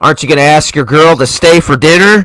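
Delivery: movie-dad style fatherly voice.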